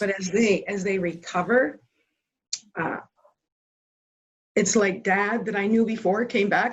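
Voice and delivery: choked-up voice, catching with emotion. Describing their father's recovery from addiction, getting emotional. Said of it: "So now I'm getting emotional".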